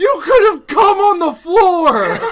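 very high, very loud, freaked-out screaming. Acting out how she screamed at the speaker, retelling a scream. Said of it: "screaming at me like".

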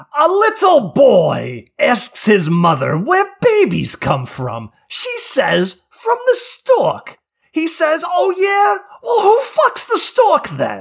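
high, loud, slow squawking comedian voice. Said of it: "in the voice, Fox".

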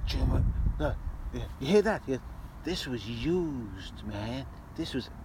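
slow, deliberate, drawn-out sinister film character voice. Retelling a film scene, quoting a Nazi character holding an empty can; impression of a film character. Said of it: "this is a great impression".

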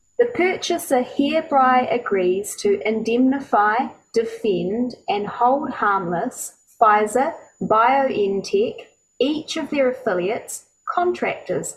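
slow, careful, deliberate reading, word by word. Reading a dense indemnification clause aloud, reading it slowly. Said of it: "I'm going to read it slowly".

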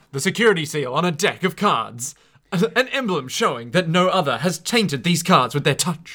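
dramatic, super hyped English voiceover voice. Imitate the narrator guy from the voiceover sequences, super hype English narrator impression. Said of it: "not a bad impression of the English narrator".

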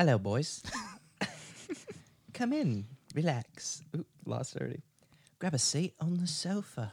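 put-on warm, welcoming English-accented voice. Voicing Freddy as he greets two burglar men, in an English accent. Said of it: "do that English one that you do really well".

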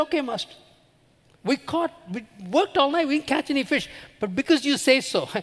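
outwardly respectful sarcasm. Retelling Peter's reply to Jesus about the fishing: imitating a sarcastic tone. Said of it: "can you just imagine the sarcasm in those words?".

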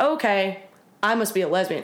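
ordinary talk, nothing marked

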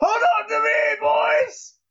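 very high, urgent called-out voice. Voicing a character calling to the boys as the Minotaur is dealt with, yelling. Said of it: "I do yell".

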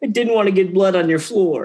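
whining voice on the verge of tears. Recounting a scene, quoting a man who gets whiny: imitating a whiny near-crying voice. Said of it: "gets really kind of whiny and almost like he's going to cry".

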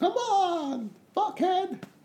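very high, abusive yelling. Acting out people yelling at a parkour runner: bystanders yelling. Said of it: "yelling at the parkour person".

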